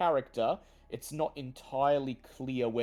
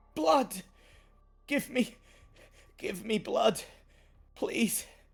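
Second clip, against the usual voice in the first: very high, quivering, trembling pleading voice; 11 semitones higher than usual. Voicing a terrified ghoul girl begging for blood: trembling plea. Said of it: "She looks up at you, trembling".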